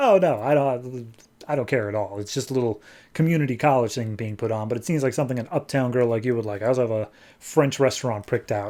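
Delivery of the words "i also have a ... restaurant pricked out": ordinary talk, nothing marked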